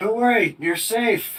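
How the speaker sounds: high-pitched, comforting, reassuring yell. Game master voicing a character calling up from behind cover, yelling. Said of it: "Adrian will yell up from behind his cover".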